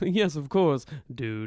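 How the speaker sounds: relaxed, easy-going rich bro voice. Speaker imitating how a man says dude, wealthy and moneyed. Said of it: "he says dude so differently... wealthy, moneyed kind of".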